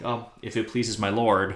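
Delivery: put-on cold dismissive tone. Retelling a book scene where Sansa answers Tyrion: imitating Sansa's cold shoulder. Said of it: "such a cold shoulder".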